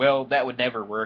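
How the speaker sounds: smug, talking-down tone. Acting out what you'd have to say to someone, mock-condescending. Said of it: "you have to condescendingly say".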